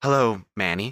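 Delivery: casual, downplayed, understated offhand tone. Voicing a patient in a wheelchair greeting a visitor: quiet voice. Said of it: "Donnie quietly says, without looking up".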